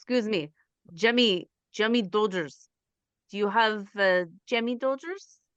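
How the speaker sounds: put-on, fake Russian accent. Asking a store clerk for an item, in a Russian accent. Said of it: "Say it again as you're Russian".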